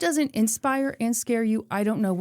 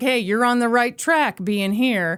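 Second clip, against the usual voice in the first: put-on, mock condescending tone. Retelling what Charles said to a man: imitating a condescending remark. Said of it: "said something condescending to him".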